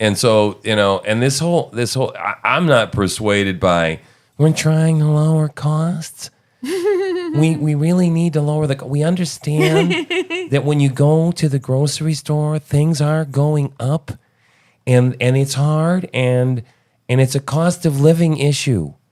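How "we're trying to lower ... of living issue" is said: put-on nasal politician voice, higher pitch. Quoting a politician on lowering costs: Kamala voice. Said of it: "Is this your Kamala voice?".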